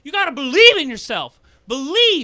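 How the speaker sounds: shrill, very loud, high yell at full blast. Mocking a motivational speaker by doing his voice: Tony Robbins impression. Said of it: "let's just do Tony Robbins back and forth".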